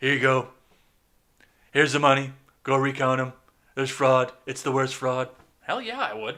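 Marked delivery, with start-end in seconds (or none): 0.0-5.3 loud, gravelly, gritty delivery. Imagining paying for a recount himself, in a gravelly Trump voice. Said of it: "if I had that gravelly voice like Trump".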